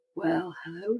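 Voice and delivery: soothing, calm sleep-story narrator voice. Quoting the opening line of a sleep story on an app: Matthew McConaughey voice. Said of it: "and he goes".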